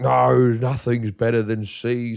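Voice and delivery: clumsy, slow, drawn-out bad motherly voice. Retelling what the speaker's mum said about chocolate: bad impersonation of mum. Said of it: "this is a really bad impersonation of my mum".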